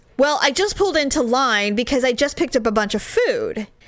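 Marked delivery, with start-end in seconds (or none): none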